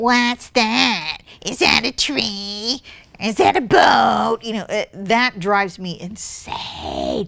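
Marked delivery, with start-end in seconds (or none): 0.0-4.4 put-on curious voice, "tree" drawn out. Explaining why she paints people, she mimics onlookers at her painting: imitating curious onlookers' voice. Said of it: "(Julie makes a face and changes her voice)".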